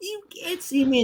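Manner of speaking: high-pitched screechy voice.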